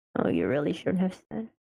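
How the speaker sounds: muttered quietly under breath. Speaking in character to someone who just answered, muttered under breath. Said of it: "they muttered that in their breath".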